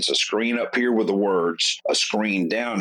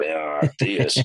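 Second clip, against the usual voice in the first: hoarse, rough-edged, worn, raspy voice; 4 semitones lower than usual. Retelling a recording session after losing the voice: imitating own raspy voice. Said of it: "I had more of a raspy voice".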